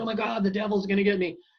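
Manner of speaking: high, loud, frantic, panicked cry. Retelling a session where a person panicked about the devil: imitating someone freaking out. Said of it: "he started freaking out and he goes".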